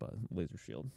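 breathy whisper, very soft. Retelling an end-credits scene where a character whispers: imitating a whisper. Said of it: "whispers, like".

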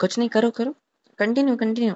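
sarcastic, dismissive tone.

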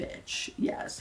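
breathy whisper under the breath.

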